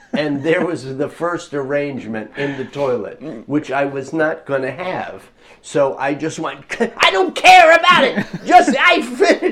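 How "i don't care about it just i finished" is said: shrill, raised, very loud, high-pitched outburst. Retelling finishing a piece in a fit of passion, retelling a raised voice. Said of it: "I kind of raise my voice, too, like I just did now".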